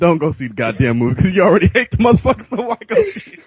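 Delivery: laughing, pitch rising at the end.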